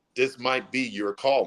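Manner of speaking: normal talking voice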